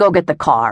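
barked, snapping voice. A man answers the narrator's calm question, barking. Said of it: "he barked".

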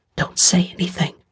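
hushed, breathy whisper under the breath. Teresa, clutching Peter's shirt from behind among armed fighters, warns him: whispered. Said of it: "clutched Peter's shirt from behind and whispered".

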